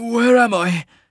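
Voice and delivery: very high, rasping, hoarse voice. He wakes in blackness, tasting ale and bile, and asks where he is: raspy. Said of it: "He rasped".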